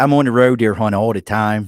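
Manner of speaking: very loud Baltimore local accent. Showing how words like road sound: Baltimore accent. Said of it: "That's that Baltimore accent you're hearing".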